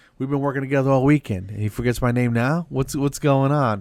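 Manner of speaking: acted, loud, playful, jokingly put-out teasing. Retelling a fellow comic's reaction to a forgotten name: imitating someone teasing. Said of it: "he had to bust my chops about it".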